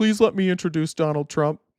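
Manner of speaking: put-on begging voice. Mocking a man who stayed in his car, imitating Andy Biggs begging. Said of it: "him like just begging".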